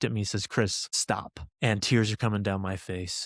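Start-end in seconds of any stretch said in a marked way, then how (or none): 0.5-1.4 put-on stern, fatherly voice. Retelling the father pulling the car over: imitating a stern father. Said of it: "He didn't yell this time, but he was stern".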